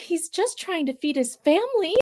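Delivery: small voice pitched very high. Retelling what Brian says as the music turns scary, imitating Brian's quiet little voice. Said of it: "in this like quiet little voice".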